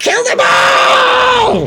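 very high, shrill screaming with all drawn out. Voicing a woman behind the blights who screams at the party: screaming a command. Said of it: "she just screams".

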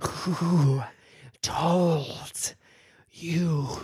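snake character voice. Retelling what the snake said: snake voice. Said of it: "that's how I'm able to do that voice. The snake goes".

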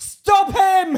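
shrill, very loud, high-pitched shouting. Retelling how a struggling officer chasing a man shouted at him: imitating a shout. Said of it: "and he shouted at me".

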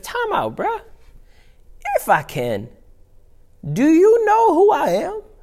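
sassy, very high-pitched voice swooping up. Acting out Jesus answering a father's doubting plea: sassy Jesus voice. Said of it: "I love sassy Jesus".

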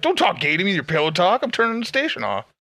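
mocking grandpa voice.

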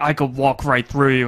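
low, quiet villain mutter. Retelling a horror film scene, Wishmaster mumbling under his breath. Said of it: "he mumbles underneath his breath".

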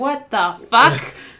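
mock incredulous outburst. Retelling a reaction to a nephew's sarcastic remark while driving; retelling an incredulous outburst. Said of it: "And I'm like".

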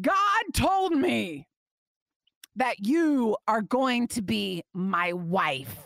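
commanding, authoritative preacher voice. Retelling what a speaker told her in front of 25 kids, imitating authoritative preacher voice. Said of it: "in preacher voice".

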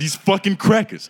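heated, passionate, high-pitched yell with hard R. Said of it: "it was just real passionate, hard E R".

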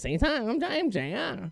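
very high-pitched, deliberate, drawn-out voice. Imitating a former co-host: imitating j r's high-pitched voice. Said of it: "in a high-pitched voice like this".

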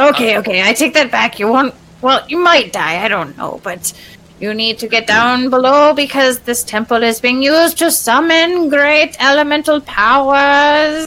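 high-pitched creature voice. Game master voicing an ooze mephit speaking to the players, ooze mephit voice. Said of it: "This is an ooze mephit".

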